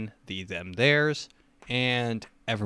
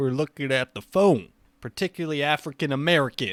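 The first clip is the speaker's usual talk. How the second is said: loud yelling throughout the whole line; 4 semitones higher, 5 dB louder than usual. Trying the Joe Biden impression, yelling every sentence.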